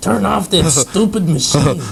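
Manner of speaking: high cartoon scolding voice.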